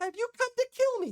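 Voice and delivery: very high, tiny little fairy-dragon voice. Voicing a small fairy dragon who greets a player: small fairy dragon voice. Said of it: "this fairyish small looking dragon".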